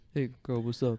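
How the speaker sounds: fake deep masculine voice. Trying out a man impersonation, in a put-on man voice. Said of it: "I feel like I could do a pretty good man impersonation".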